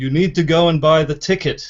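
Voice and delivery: big, beaming pronouncement tone. Telling a story where God finally answers a devastated woman, in a big deep voice of God. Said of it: "this big deep beaming voice says".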